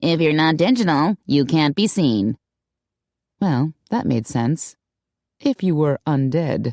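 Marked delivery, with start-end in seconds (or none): 0.0-2.4 nasal voice. Reading a receptionist answering the phone: nasal voice. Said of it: "a receptionist answered with a nasal voice".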